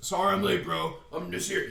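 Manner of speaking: rough, creaky way of talking. Retelling how a friend greeted everyone on arriving: imitating Clint. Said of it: "He talks like that, no joke".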